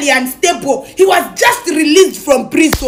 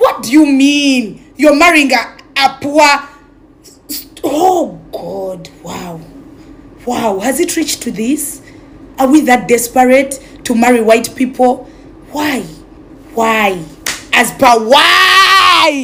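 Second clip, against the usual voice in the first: slow, frustrated, exasperated, disbelieving delivery; 3 semitones lower than usual. Questioning the listeners directly, frustrated. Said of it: "I'm too frustrated on you people's behalf".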